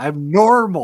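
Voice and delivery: loud frustrated voice. Imitating Karl Urban's frustrated square-talking-guy voice. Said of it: "a frustrated, square talking guy".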